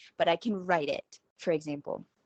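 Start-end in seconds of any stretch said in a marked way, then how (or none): none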